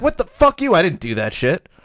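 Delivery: outraged, indignant, furious and animated. Showing how a wrongly accused person would react, mock-furious denial. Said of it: "you'd be like furious".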